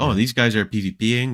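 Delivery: normal talking voice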